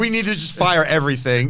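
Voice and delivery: normal talking voice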